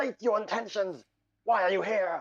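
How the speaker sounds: commanding, high, crystalline dragon shout. Voicing a dragon confronting the listeners, shouting. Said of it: "She will shout".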